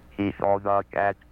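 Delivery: flat, pitchless, monotone synthetic computer voice. Demonstrating a computer speaking a sentence fed to it: flat monotone computer voice. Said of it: "The flat, monotonous tones of the computer".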